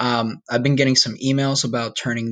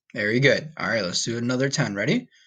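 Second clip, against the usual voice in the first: normal talking voice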